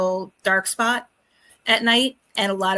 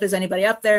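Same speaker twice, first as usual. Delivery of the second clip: plain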